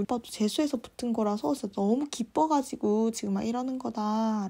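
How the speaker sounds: ordinary delivery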